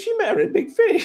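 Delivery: acted shout. Retelling a reaction to a tv episode: imitating shouting at the tv. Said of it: "I was shouting at the T V".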